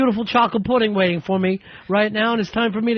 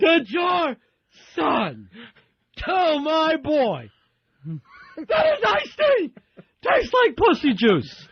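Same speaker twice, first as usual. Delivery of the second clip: mock outraged, high, swooping angry scream; 6 semitones higher than usual. Retelling a kid's father at the door, imitating a father screaming. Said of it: "screaming at my father".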